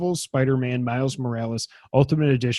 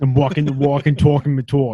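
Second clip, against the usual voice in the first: put-on Long Island accent, spoken louder; 7 dB louder than usual. Answering another speaker's request to say it: Long Island accent. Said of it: "Now say it in the Long Island accent".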